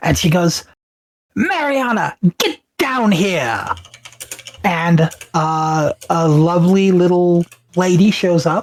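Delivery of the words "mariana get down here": high, swooping, cruel tone with wide pitch swings. A woman's tone turns as she calls down for Mariana, in a Cruella de Vil-like voice. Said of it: "goes from um the um nice uh fairy in Wizard of Oz to like Cruella de".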